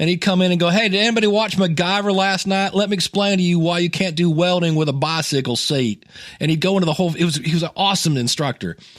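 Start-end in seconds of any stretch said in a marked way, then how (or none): 0.7-6.0 put-on Southern accent. Imitating a college physics teacher as he comes into class: Ken's Southern accent. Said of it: "He had a southern accent".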